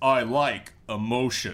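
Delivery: very deep, low character voice. Quoting the slogan of the Skylander he created, in a very deep voice. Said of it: "in a very deep voice".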